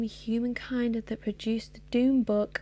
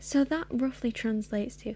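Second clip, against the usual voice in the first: ordinary delivery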